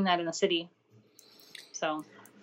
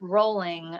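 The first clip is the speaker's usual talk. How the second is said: sarcastic, drawn-out tone. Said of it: "It's all sarcasm".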